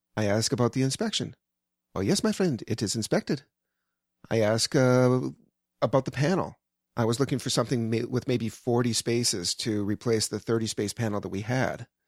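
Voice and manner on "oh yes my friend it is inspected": put-on Iranian-accented speech. Recounting asking this guy about the inspection, imitate his heavy Iranian accent. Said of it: "it was a heavy Iranian".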